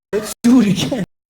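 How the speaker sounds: creepy-sounding put-on voice. Retelling what a partner said after sex: imitating a creepy voice. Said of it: "creepy like that".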